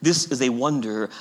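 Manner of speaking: plain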